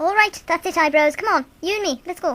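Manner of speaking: loud, brash, belligerent Irish brogue. In an audio drama, the token Irishman challenges a man he calls Eyebrows, in an Irish accent. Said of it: "[name] as the token Irishman. / that man has provoker written all over his tattered coat and whiskey-stained breath. / Mr. [name]. / [name] as the token Irishman. / [name] as the token Irishman. / Cre".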